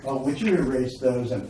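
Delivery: ordinary talk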